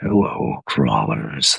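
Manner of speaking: very low, rough, rumbling voice. Trying out character voices for the greeting, with more rumble. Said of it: "There's some a little more rumble in there".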